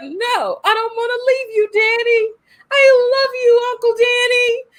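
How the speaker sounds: put-on very high-pitched British accent. Retelling a story's ending, the speaker voices Abra talking to her uncle, in a British accent. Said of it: "I don't know why I gave her a British accent".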